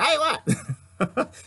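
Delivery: very high put-on Italian tough-guy mobster voice. Retelling a story, the speaker switches voice for a character, Vinny the Nose voice. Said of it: "I gotta change my voice".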